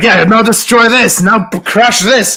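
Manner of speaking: mock, very high, loud, over-eager excitement. Retelling urging someone to smash things after a success: imitating a hasty excited command. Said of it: "in a mad haste".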